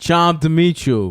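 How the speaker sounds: very loud, put-on Carroll Gardens Brooklyn accent. Imagining a local guy who says charmed, Carroll Gardens guy accent. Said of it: "Carol Gardens".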